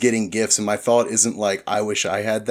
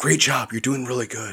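put-on whisper; 3 semitones higher than usual. Acting out Ron whispering in someone's ear: whispering as Ron. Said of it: "Ron's just coming up whispering in your ear".

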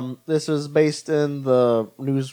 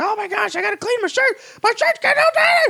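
very high, frantic put-on voice. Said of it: "that's just my impression of Charlie Day".

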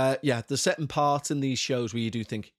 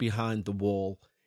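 normal talking voice

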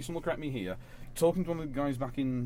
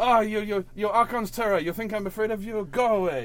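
put-on French Canadian accent, higher; 8 semitones higher, 9 dB louder than usual. Voicing a character for the group, in a french canadian accent. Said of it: "Like a French Canadian?".

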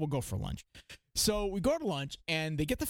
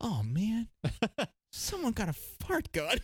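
high voice, musing, thinking aloud; 6 semitones higher than usual. Retelling what a woman said on spotting a kid's toy, said to herself. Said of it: "and to herself".

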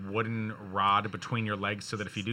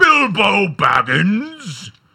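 very loud, booming, pitched-up, very slow, drawn-out sing-song; 11 semitones higher, 16 dB louder than usual. Joking about wanting an echoing voice: Gandalf voice. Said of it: "I wanna sound like Gandalf when he's like".

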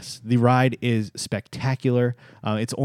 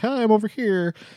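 very high, piped-up voice; 10 semitones higher than usual. Joking about awkward distant character photos: Mickey Mouse voice. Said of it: "Mickey Mouse is like".

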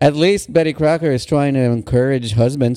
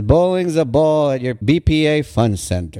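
ordinary delivery

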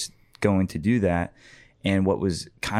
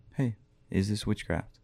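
put-on small, still voice, quieter; 7 dB quieter than usual. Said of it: "hearing this small, still voice saying".

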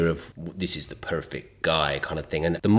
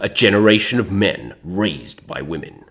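generic film-narrator, movie-trailer announcer voice; 3 semitones higher than usual. Chatting about the movie trailer voice guy, quoting a film line in movie trailer voice. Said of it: "my generic film voice".

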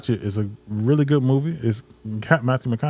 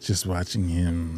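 put-on suggestive, erotic delivery, lower and quieter; 6 semitones lower, 7 dB quieter than usual. Repeating another speaker's words the way they came off: imitating a suggestive tone. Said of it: "That was a little erotic".

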